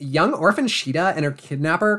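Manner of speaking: put-on teen mean-girl character voice. Narrating a story aloud, in a Mean Girls voice. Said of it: "I'll just do a Mean Girls voice".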